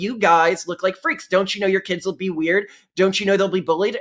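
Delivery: ordinary delivery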